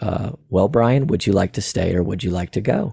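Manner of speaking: put-on reassuring tone. Retelling what a voice asked Brian at the door, imitating a reassuring voice. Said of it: "it was very reassuring".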